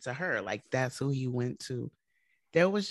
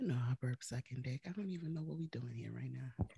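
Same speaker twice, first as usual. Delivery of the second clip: suggestive, seductive, sultry tone; 3 semitones lower, 11 dB quieter than usual. Answering a question about burping at a bad time, in a seductive tone. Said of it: "why did you say that so seductively?".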